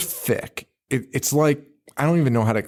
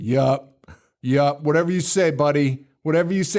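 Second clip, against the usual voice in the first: stock New York shopkeeper voice. Retelling a movie scene, imitating a new york shop owner. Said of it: "the perfect New York shop owner".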